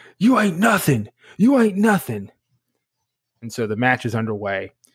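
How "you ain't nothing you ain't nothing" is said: loud hollering with swooping pitch. Retelling a match, imitating Brock Lesnar yelling at Eddie. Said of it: "Brock starts yelling at Eddie".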